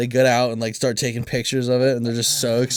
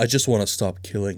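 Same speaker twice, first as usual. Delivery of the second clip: mock measured, sophisticated voice, much lower; 3 semitones lower than usual. Friends act out a scene with Sarah, imitating a measured, sophisticated voice. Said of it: "It's so measured and sophisticated".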